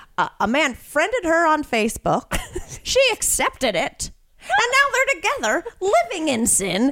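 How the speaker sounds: put-on high-pitched elderly old woman voice. Retelling what an old woman said at a bar: imitating an old woman. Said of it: "She goes".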